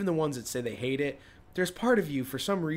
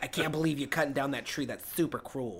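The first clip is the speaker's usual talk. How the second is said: put-on old smoker lady voice. Imitating environmentalists who object to cutting trees: imitating an old smoker lady. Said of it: "talk like an old smoker lady".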